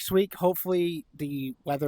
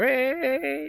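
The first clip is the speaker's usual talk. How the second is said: cracking voice, breaks on last "raid", drawn out; 12 semitones higher, 3 dB louder than usual. Calling everyone into a game raid, voice cracking. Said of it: "fucking voice crack".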